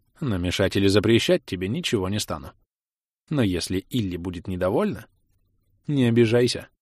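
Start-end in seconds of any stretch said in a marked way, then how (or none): none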